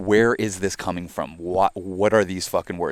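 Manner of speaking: ordinary talk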